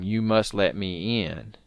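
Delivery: eerie, creepy, slow, drawn-out half-whisper. Retelling a story where a boy half-whispers to a man in a truck, retelling his half-whisper. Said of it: "the boy whispers to him".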